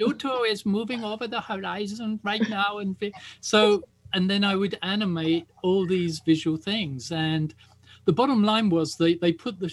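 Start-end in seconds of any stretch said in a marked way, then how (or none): 0.0-2.8 put-on high-pitched voice with a German accent. Quoting a man from a British TV pilot, in a put-on German accent. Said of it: "he talked with like, a german accent".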